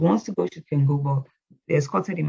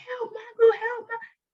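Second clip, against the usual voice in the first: very high, drawn-out screaming cry. Retelling running to the neighbor for help: retelling a scream for help. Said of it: "I was screaming".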